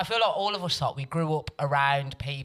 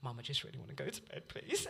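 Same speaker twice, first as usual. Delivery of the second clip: put-on tearful, pleading voice, quieter; 15 dB quieter than usual. Retelling being caught with sandwich filler: imitating own past pleading. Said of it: "And I just started crying".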